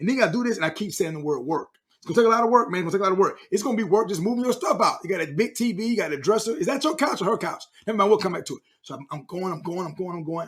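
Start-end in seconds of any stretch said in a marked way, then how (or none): none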